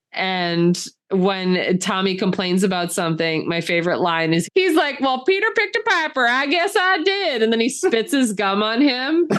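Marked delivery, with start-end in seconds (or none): 5.0-7.4 put-on Southern accent, pitched way up very high. Quoting a disguised movie character at the drive-in: Randy's Southern accent. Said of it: "he has kind of a Southern accent".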